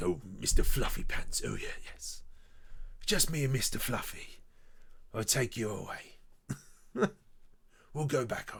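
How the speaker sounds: gruff, butch British hard-man tone. Acting out the buyer character's line for a render: Jason Statham voice. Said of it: "kind of like a Jason Statham".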